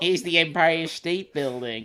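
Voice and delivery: imitated American accent. Retelling a woman announcing a landmark to a group on a new york trip, put-on american accent. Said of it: "but in an American accent".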